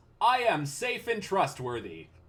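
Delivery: vast, booming voice, high and loud. A doll looks up at the listener and speaks: Otto Chthon's booming voice. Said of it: "Otto Chthon's booming voice says".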